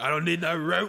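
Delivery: put-on Belgian accent, action-hero style. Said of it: "what's with his accent?".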